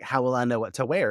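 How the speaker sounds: plain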